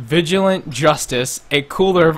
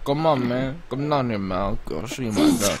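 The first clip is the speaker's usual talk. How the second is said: soft, put-on Mexican cowboy accent; 3 semitones lower, 5 dB quieter than usual. Asked to do a mexican cowboy impression, doing a mexican cowboy accent. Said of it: "Can you do, like, a Mexican cowboy impression?".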